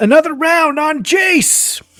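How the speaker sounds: shrill, booming, very loud, high-pitched yell. Acting out a man who yells as he starts walking out, yelling. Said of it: "he'll yell".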